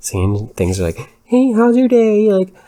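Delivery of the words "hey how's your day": very high, loud pet-talk voice. Retelling a neighbor chatting to a dog: imitating neighbor talking to a dog. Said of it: "she had a full-fledged conversation with my dog".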